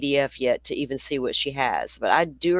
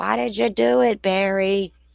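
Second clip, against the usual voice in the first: raw, raspy, high-pitched put-on bullhorn-style scream; 5 semitones higher, 3 dB louder than usual. Imitating another person screaming questions through a bullhorn: imitating someone screaming. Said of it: "with your Bullhorn screaming".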